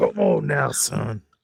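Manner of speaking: put-on loud, rough, creaky, gravelly old man voice. Giving someone advice, in a gravelly old man voice. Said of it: "I'm trying to have that old man gravelly voice".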